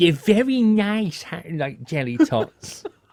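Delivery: put-on high, slow, childlike kiddie voice. Joking about an advert where adults talk like kids: Haribo advert kiddie voice. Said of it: "adults talking with a kiddie voice".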